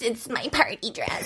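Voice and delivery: irritating, whispery, breathy put-on voice. Saying a phrase as a joke: annoying voice. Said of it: "I had to do the annoying voice with it".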